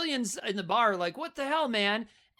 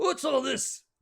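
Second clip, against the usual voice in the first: put-on old-timey British accent, older man voice; 4 semitones higher than usual. Describing a movie's small-town constable, doing an old-timey british constable impression. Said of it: "Old-timey British cops have to say".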